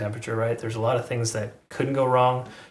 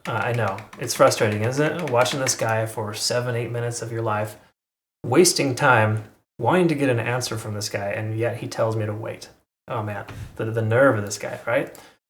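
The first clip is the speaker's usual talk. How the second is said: ordinary talk, nothing marked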